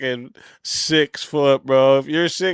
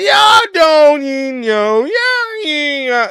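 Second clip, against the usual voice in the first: affected street slang, very high, slow, drawn out; 14 semitones higher, 6 dB louder than usual. Mocking the way a dude talks, imitating his put-on slang voice.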